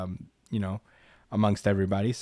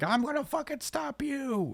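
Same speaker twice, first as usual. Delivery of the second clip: high-pitched yell. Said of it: "he just yells at him for a while".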